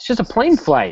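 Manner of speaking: angry hostile edge. Answering someone frightened by his travel plans, in a hostile tone. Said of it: "there was a hostility to your voice".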